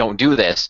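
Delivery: mock near-crying, tearful voice. Retelling a tv character's tearful plea: imitating someone nearly crying. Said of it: "practically crying".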